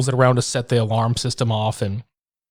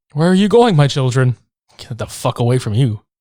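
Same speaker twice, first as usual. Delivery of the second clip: imitated calm preacher voice; 4 dB louder than usual. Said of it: "just so fucking calm".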